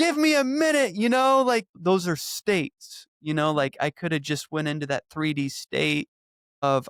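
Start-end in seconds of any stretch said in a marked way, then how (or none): 0.0-1.0 put-on shrieking screaming, pitched very high. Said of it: "Or I could be screaming".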